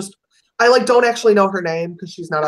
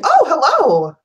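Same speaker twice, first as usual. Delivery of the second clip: very high, falsely professional fake phone voice; 10 semitones higher, 4 dB louder than usual. Showing how they answer the phone at work, fake professional phone voice. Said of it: "my professional answering the phone at work voice".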